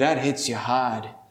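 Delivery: put-on, low-pitched New England accent. Retelling what a man behind them said to his wife during a sermon, New England accent. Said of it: "in the New England accent way".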